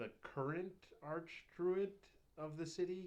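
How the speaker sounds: mocking, sarcastic delivery. Asking a question in character about the current archdruid: sarcastic question.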